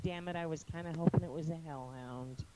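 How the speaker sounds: soft muttering under the breath to oneself. Playing a character in a game after a rat appears, muttered under breath. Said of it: "first I'm gonna mutter under my breath".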